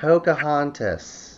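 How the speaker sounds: snooty, lofty, pompous tour-guide pronouncement voice. Repeating the next film title when asked to say it again: odd pompous tour guide delivery. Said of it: "I have no idea why I'm saying it that way".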